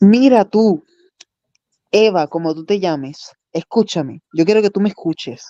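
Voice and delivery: mock put-on Spanish accent. Taking a turn, the speaker does their best spanish voice. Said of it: "let me do my best Spanish voice".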